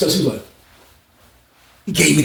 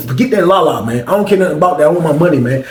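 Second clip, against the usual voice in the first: normal talking voice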